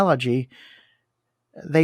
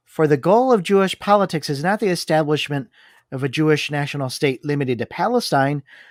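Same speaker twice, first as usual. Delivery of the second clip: ordinary talk, nothing marked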